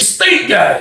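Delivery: the dumbest, dopey voice. Retelling an old dude answering a request for soap: imitating Frank's dumbest voice. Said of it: "He had the dumbest voice in the world".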